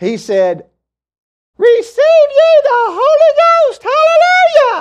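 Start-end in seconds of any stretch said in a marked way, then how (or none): 1.6-4.8 booming, shrill, very high, very loud, drawn-out shout. Retelling a man calling out to him in the park, in a very loud, high tone. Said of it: "in this very loud, high tone".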